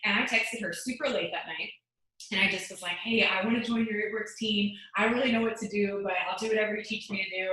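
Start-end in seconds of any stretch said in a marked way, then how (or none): none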